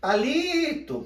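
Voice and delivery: li in Palito stressed and held longest. Calling out for a friend named palito at his house, stress on li. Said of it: "Repare que o li é a parte que eu mais permaneci pronunciando".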